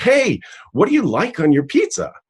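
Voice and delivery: play-acted, very high shout. Retelling a man yelling across to the speaker from a wall phone: imitating someone yelling. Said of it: "And he yells to me".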